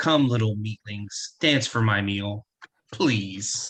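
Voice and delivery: low, deep, female dragon voice. Speaker voicing the dragons answering the group, deep booming feminine dragon voice. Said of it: "you hear a deep, booming, feminine voice".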